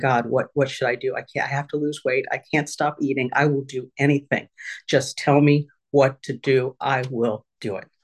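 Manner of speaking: put-on tearful, crying, pleading voice. Recounting lying on the office floor crying to god, retelling a tearful plea. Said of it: "laying on the ground and crying and saying".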